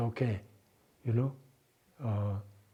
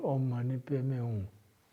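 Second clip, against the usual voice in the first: put-on murmur, spoken very quietly. Retelling what a woman in a trance said: imitating someone saying it very quietly. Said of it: "So she said very quietly".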